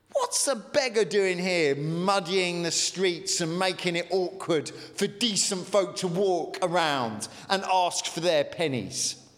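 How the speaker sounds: plain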